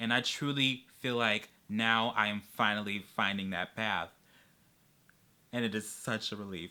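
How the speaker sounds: soft, choked-up, near-tearful voice. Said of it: "I'm gonna cry".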